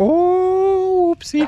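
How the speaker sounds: high-pitched mock whoopsie.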